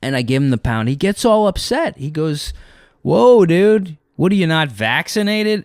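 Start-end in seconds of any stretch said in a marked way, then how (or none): 3.0-5.6 high, mocking, sarcastic teasing. Retelling what he said after the speaker gave him the pound: retelling a sarcastic remark. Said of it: "he said it like sarcastically".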